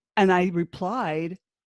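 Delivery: plain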